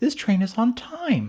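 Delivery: very high, astonished train-announcer voice. Imitating a train announcement that sounds oddly surprised, mock-surprised announcement voice. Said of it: "it sounds surprised".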